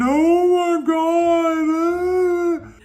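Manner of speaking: acted, very slow, high tearful sob, "God" stretched. Retelling how the sister walked down the hill: imitating sister crying. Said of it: "walking down the hill crying, saying".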